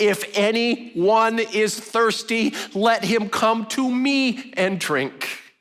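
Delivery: loud, high yell, calling out. Speaker retells a man yelling across the temple compound, retelling a loud yell. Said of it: "he yells across the temple compound".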